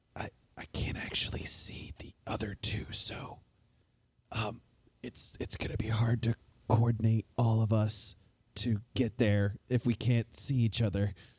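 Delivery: whispered all the way through, halting delivery. Speaking in character into a Vox box to the group: whispering. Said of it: "basically whisper the same thing".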